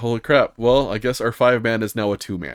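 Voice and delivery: ordinary delivery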